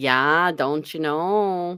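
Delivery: stretched vowels. Speaker demonstrates how Wisconsin people talk, nasal Wisconsin accent. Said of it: "you got to kind of stretch those vowels out".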